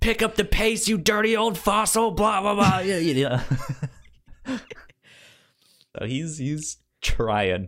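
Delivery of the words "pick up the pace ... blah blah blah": put-on villain scream, high and loud. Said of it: "the terror is screaming at him".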